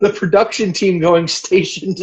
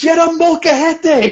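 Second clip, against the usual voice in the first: loud shout delivered at a higher pitch; 9 semitones higher than usual. Retelling shouting advice at the TV: retelling a shout at the TV. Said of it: "I shouted at the T V".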